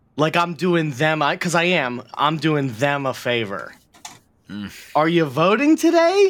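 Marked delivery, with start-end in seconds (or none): 5.0-6.3 play-acted, awkward, very high lilting inflection. Retelling how someone asked them a question, mimicking favor-asking inflection. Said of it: "It's that same inflection".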